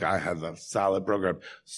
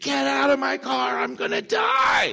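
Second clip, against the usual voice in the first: acted, panicked, very high, rough, ragged, drawn-out scream; 5 dB louder than usual. Retelling screaming at a man in their car at 7:30 a.m.: retelling a scream. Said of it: "I screamed".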